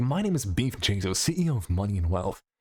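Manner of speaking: low, cocky, smug businessman voice. Explaining how he voices his character, Beef Jesus with businessman confidence. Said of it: "just with a little bit more like businessman confidence in it".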